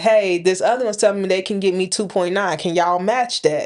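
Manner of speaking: ordinary delivery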